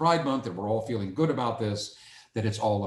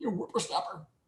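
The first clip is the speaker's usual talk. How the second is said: put-on old man voice, very high and soft; 9 semitones higher, 5 dB quieter than usual. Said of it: "I sound like an old man".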